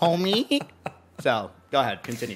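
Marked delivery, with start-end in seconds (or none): 0.0-0.6 bad put-on cartoon motherly voice. Adding one more thing to a judged bit: awful Marge Simpson impression. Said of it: "That was Marge Simpson".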